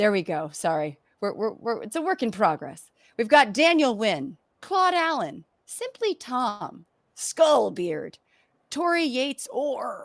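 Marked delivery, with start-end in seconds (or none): 8.7-10.1 high pirate voice, called out. Reading out a list of patron names, said like a pirate. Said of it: "gotta say it like a pirate".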